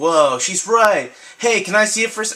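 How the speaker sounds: high put-on kid character voice. Reading a kid's game dialogue aloud, put-on voice for a kid character. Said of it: "why am I giving him that kind of voice".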